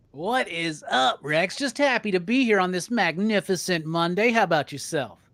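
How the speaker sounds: slow, put-on radio announcer voice. Greeting Rex at the start of a live stream: put-on radio voice. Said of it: "Why is your voice changing?".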